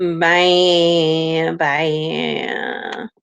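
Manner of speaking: put-on, mocking sarcastic voice. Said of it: "We're just making fun of the Kardashians".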